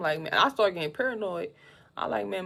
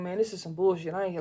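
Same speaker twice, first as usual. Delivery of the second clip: heated, fed-up, angry complaining rant. Retelling what a man said after his test came back dirty: imitating an angry man. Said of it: "he was hot".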